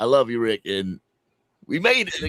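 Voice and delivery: choked up with feeling, swooping emotional voice. Telling another speaker what his late brother wished, getting emotional. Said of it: "I'm getting a little emotional right now".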